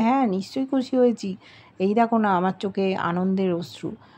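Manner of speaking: ordinary delivery, nothing marked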